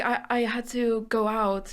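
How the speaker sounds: timid, hesitant, shy, slow little voice. Retelling how they answered a man's demeaning greeting; acting out a shy voice. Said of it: "like in a really like you know like shy voice".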